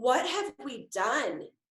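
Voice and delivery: sobbing, words broken up by crying. Retelling driving away from the preschool: retelling sobbing. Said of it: "both just sobbing and going".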